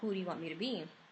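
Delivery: very dark, otherworldly spirit voice. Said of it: "he says to me in a very dark voice".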